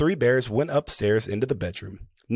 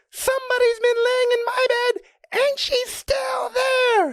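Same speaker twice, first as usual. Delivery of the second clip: very high, small, squeaky, tiny bear cub voice. Narrating a story, voicing the little small wee bear in his little small wee voice. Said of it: "in his little small wee voice".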